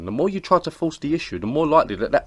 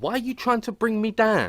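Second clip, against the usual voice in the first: street-slang, gang-style voice pitched very high; 10 semitones higher than usual. Answering a friend's greeting, talking like a gang member. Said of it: "You make that noise again".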